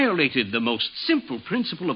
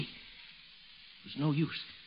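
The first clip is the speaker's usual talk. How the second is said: ordinary delivery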